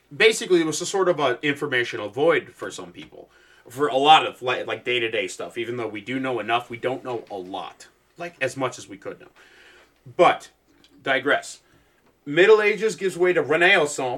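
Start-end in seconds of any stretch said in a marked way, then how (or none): 12.2-14.2 failed put-on accent that comes out Midwestern. Telling a history story, in a bad accent that comes out Midwestern. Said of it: "the most Midwestern attempt I've ever seen at a fucking accent".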